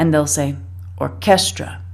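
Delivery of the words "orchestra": orchestra with stress on second syllable -ches. Showing how spanish first-language speakers say it: stress on second syllable of orchestra. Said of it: "tend to emphasize the second syllable".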